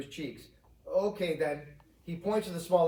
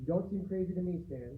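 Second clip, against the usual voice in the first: gentle, soft, calming and soothing voice; 2 semitones higher, 6 dB quieter than usual. Reading a story, Rose reassuring Stan: soothing. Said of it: "Rose says soothingly".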